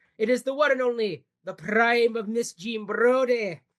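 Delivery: put-on Scottish accent. Introducing the film being discussed today: put-on Scottish accent. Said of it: "I'm dropping that accent".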